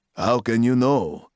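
plain reading voice

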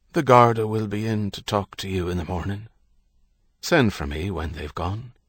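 plain reading voice

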